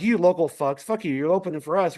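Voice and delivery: imitated angry voice. Retelling a phone call from their manager: imitating an angry manager. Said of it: "this call from their pissed off manager going".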